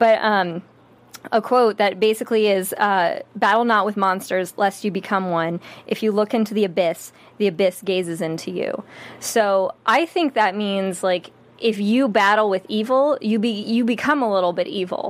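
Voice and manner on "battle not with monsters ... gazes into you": ordinary delivery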